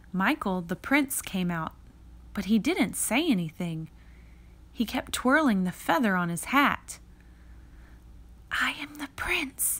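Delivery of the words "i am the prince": high, hushed whisper under the breath. The narrator whispers to Michael, who plays the prince, to help him out: whispered. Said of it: "I whispered to help him out".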